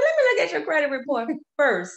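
laughing while speaking. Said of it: "I said".

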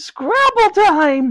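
bright, very high, cheerful exclamation tone. Granny sees Ben come in and holds up the Scrabble board; cheerful exclamation. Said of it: "she exclaimed cheerily".

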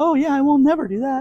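very high-pitched squeaky cartoon voice. Talking to viewers, the speaker slips briefly into a Mickey Mouse voice. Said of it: "kind of my Mickey Mouse voice".

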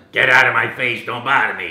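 very loud Brooklyn accent. Recalling an idea for an audition, voicing an Italian plumber from Brooklyn. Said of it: "Italian plumber from Brooklyn".

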